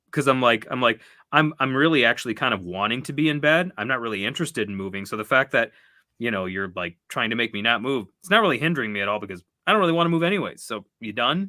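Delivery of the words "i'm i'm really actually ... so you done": plain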